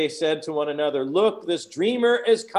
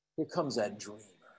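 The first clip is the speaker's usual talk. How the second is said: put-on very quiet, very low, venomous contempt; 7 semitones lower, 13 dB quieter than usual. Retelling what those who wanted him dead said: acting out words dripping with hatred. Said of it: "You hear that it's dripping with hatred".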